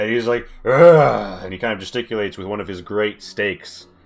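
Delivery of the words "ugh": furious monster growl, higher and louder. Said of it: "He's screaming. He's angry".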